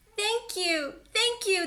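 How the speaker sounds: tiny, squeaking, squeaky little mouse voice. Narrator voicing the mouse and her baby thanking George, squeaky voice. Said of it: "they squeaked".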